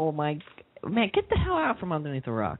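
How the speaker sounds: cheeky, sassy, swooping sing-song. Teasing someone who has never heard of the phrase, sassy.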